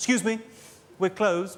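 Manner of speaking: haughty, stuck-up, snooty voice. Imitating a department store clerk behind the counter at closing: mock-snooty shop clerk voice. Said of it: "you'll get from behind the counter quite a snooty voice".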